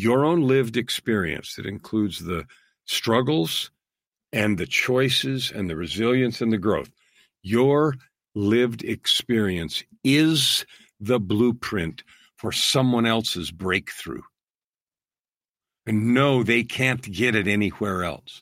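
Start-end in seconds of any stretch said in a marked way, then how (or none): 0.0-14.2 very slow, deliberate, each word given time. Speaker addressing listeners so they hear it, saying it really slow. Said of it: "I'm going to say this really slow".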